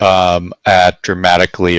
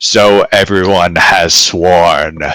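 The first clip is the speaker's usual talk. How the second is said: otherworldly, unearthly sounding voice. Game narrator voicing Stellan as everyone swears an oath: otherworldly voice. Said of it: "in this otherworldly voice says".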